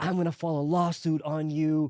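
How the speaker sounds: put-on angry rant. Retelling a phone call with a woman threatening a lawsuit, imitating her going off. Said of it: "she started going off".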